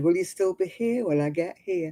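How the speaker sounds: usual speaking voice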